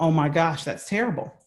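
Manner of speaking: plain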